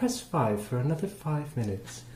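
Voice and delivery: put-on prissy upper-crust British accent. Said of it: "I sounded more like C three P O".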